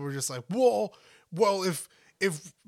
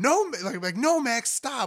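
mock yelling, higher; 7 semitones higher, 3 dB louder than usual. Speaker acts out how they yell at Max, retelling a yell. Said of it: "I yell it whenever I'm like yelling at Max".

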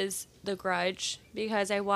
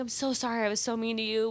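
loud, tearful, mock-crying voice; 2 semitones higher than usual. Retelling a loud childhood apology to a sister: imitating crying loud apology. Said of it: "I would cry and I'd be like".

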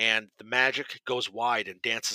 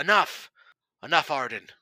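full-throated, loud, high yell; 5 semitones higher, 6 dB louder than usual. Voicing a character stopping a spellcaster mid-spell: yelling. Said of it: "she yells out".

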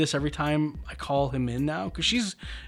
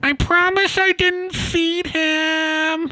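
very high, very slow, drawn-out yell; 13 semitones higher, 7 dB louder than usual. Retelling how the neighbor answered from her window: imitating the neighbor yelling. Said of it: "yelling out her window to me".

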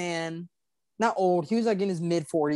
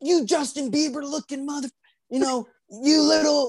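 mock screaming, pitched high; 8 semitones higher than usual. Retelling how a man with a pole yelled: imitating someone screaming. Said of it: "screaming at me".

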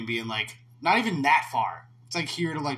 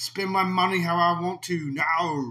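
thick, exaggerated Australian accent, pitched up; 5 semitones higher than usual. Retelling a film scene where a character buys a Mercedes, in an exaggerated Australian accent. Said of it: "that was your Australian?".

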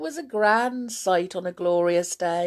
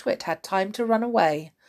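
plain reading voice

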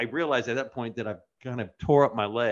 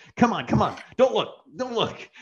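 put-on contempt, much higher, slower; 10 semitones higher than usual. Retelling how a dad led his kid away, imitating a dad's contempt. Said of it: "the contempt in the dad's voice".

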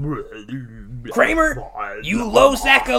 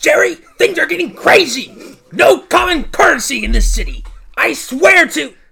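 agitated, worked-up, raised, high-pitched ranting; 8 semitones higher, 8 dB louder than usual. Playing George Costanza, bursting in upset about the city: agitated tone in character. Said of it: "Pardon my tone".

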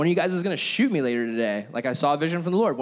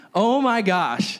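ordinary talk

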